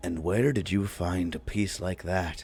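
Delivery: low, quiet, hushed voice. A character peers at the piece Revik points to and asks about it, in a hushed voice. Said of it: "he says in a hushed voice".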